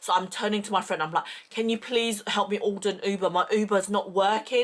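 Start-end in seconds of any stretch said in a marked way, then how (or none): none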